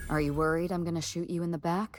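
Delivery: ordinary talk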